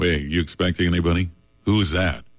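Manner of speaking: said with disgust. Acting out someone at home hearing an unexpected doorbell: disgusted tone. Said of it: "You say it with disgust your voice".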